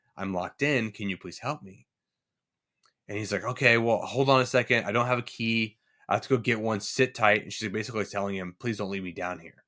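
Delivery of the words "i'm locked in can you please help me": put-on woman's whisper. Retelling a story, the speaker voices a locked-in woman asking a man for help; retelling a whisper. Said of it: "she whispers".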